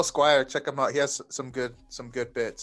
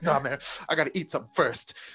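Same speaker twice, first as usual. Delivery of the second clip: fuming, angry, dismissive tone. Retelling a hungry companion's reply: imitating someone angry. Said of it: "he's so angry".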